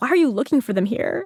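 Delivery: high-pitched, disbelieving, incredulous tone. Telling the streetlight joke, voicing the policeman: acting incredulous. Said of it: "kind of incredulous".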